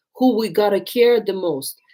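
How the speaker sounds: normal talking voice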